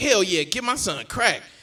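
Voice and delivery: play-acted confident, sure-of-himself, emphatic delivery. Retelling how an audience member answered a question: imitating a confident answer. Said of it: "they both said it with such confidence".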